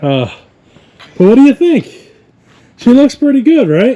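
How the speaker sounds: gasping, winded, very high, shrill and loud. After getting the car into its spot, talking to viewers, out of breath. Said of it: "I sound like a fat dude that just like ran up a really steep mountain".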